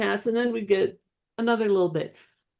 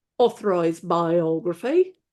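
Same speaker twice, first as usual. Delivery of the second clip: put-on English accent; 4 semitones lower than usual. Speaker repeats a phrase the way a woman said it, in an English accent. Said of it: "you have to say it with an English accent like she did".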